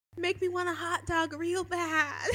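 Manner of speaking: very quiet, hushed, softly murmured. Played clip of doing a celebrity impression: Jennifer Coolidge impression. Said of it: "Here's [name] doing an impression".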